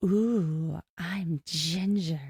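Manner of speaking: breathy, seductive voice. Imitating a cast member playing Ginger: imitating Ginger's sexy voice. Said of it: "She's got that kind of sexy".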